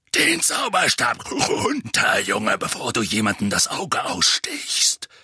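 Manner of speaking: dark, low, growling voice. Reading the story, the narrator voices a man warning Harry in a dark, growling voice. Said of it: "sagte eine dunkle, knurrende Stimme".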